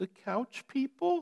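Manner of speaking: meek, high, soft, timid little squeak. Speaker retelling a quiet student's answer to the room, imitating a timid squeak. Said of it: "squeaked timidly".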